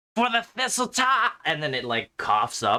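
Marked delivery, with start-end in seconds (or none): 0.1-1.3 goblin war-cry yell, much higher. A goblin attacks Aerodel and yells out in Goblin: goblin yelling a war cry. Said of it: "it yells out".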